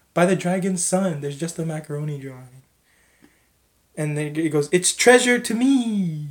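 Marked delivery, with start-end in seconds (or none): 4.8-6.3 big, booming, raised, drawn-out dragon bellow. Narrating a game scene as the treasure chest is opened: bellowing dragon voice. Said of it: "the dragon bellows".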